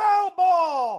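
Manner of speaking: high, loud yell of foul ball.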